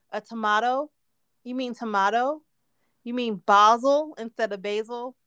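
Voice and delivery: ordinary talk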